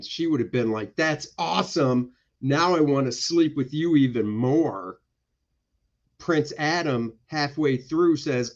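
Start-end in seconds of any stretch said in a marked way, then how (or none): none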